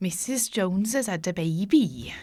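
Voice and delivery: hesitant, slow, put-on Welsh accent. Talking about favourite accents, the speaker tries a put-on Welsh accent. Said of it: "I can do the Welsh, maybe".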